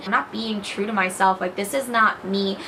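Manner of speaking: normal talking voice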